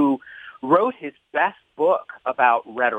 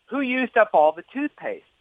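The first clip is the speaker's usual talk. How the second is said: high-pitched, acted-out shout; 10 semitones higher than usual. A father retells shouting through the bathroom door to his son, retelling a shout. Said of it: "So I shouted through the closed door of the bathroom".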